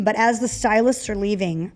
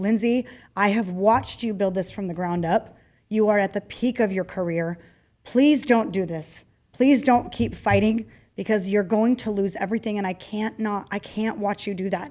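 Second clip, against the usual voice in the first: acted crying with a tearful pleading tone. Lindsay recounting what a woman said to her while crying: retelling someone crying and pleading. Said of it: "She's crying and saying".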